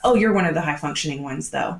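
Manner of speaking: ordinary talk, nothing marked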